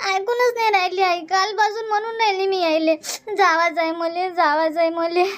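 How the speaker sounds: crying while talking. In a drama, pleading that she must go, crying while talking. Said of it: "मग आता रडू नको".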